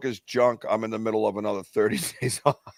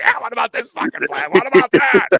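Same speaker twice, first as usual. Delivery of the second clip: very high, shrill, heated, angry bickering tone; 11 semitones higher, 7 dB louder than usual. Retelling a back-and-forth on a past trip: imitating angry arguing researchers. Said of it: "going back and forth like angry researchers".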